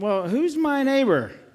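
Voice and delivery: kind of defensive voice. Showing a reader how the smart guy asks Jesus his question, defensively. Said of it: "Can you say that kind of defensively?".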